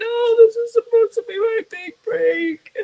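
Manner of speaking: put-on tearful voice. Retelling being upset over a ruined video: imitating own crying. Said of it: "And I was, like, crying".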